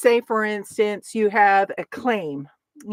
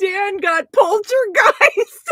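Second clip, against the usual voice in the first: talking through hard laughter, higher and louder; 11 semitones higher, 5 dB louder than usual. Reacting to dan getting poltergeist, laughing hard while talking. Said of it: "I'm laughing so hard".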